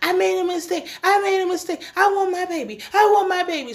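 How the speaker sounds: mock very high, frantic screaming and crying. Retelling a scene, acting out a woman screaming and crying on the ground. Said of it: "So she's just screaming like she is on the ground".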